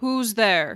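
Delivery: deep, resonant, sonorous voice ringing out with echo. Voicing an unseen figure behind a door: deep sonorous echoing voice. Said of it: "You hear this deep, sonorous voice echo out".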